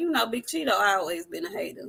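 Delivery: low, bone-dry, dead serious deadpan delivery. Retelling a line someone said with a straight face: imitating a deadpan delivery. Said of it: "said that shit with a straight face".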